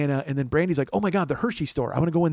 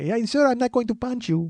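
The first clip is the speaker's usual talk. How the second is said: put-on, pitched-up man's voice with Latin American accent; 7 semitones higher than usual.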